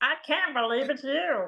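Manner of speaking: high-pitched felt-puppet frog voice. Asked about heckling people in that voice, doing a Kermit the Frog voice.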